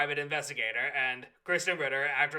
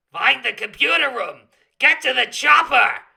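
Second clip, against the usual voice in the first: put-on cartoon crocodile voice, higher and louder; 10 semitones higher, 12 dB louder than usual. Trying a second impression of Vector on the spot: Vector impression. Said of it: "that's slightly better".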